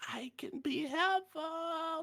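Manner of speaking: very high, very slow, drawn-out little character voice. Voicing a tooth root that speaks through a very small mouth: voice of a talking tooth root. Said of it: "it still talks to you".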